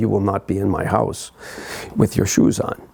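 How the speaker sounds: thick, heavy, put-on German accent. Retelling what the woman of the house said on overhearing the speaker: heavy German accent. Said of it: "in a heavy German accent and said".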